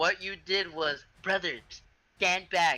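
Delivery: slow, mocking, parroting tone. Quoting a teammate's earlier words to the group: mocking imitation of a teammate. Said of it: "I like how you said it mockingly".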